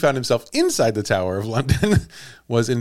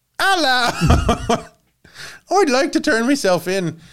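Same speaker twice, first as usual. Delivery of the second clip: very high-pitched attempted Irish accent; 10 semitones higher than usual. Acting out an irish man turning himself in in london, unsure how irish people say hello, attempted irish accent. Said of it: "How do Irish people say hello?".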